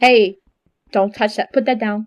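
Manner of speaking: put-on motherly voice. Asked about a mommy voice, the speaker shows her mom voice. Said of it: "I have that type of mom voice".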